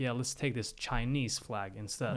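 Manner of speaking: ordinary delivery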